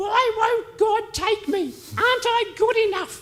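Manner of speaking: put-on very high voice of a very old woman. Recounting what a 101-year-old woman said to the speaker: imitating a 101-year-old woman. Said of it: "and I'll use the voice".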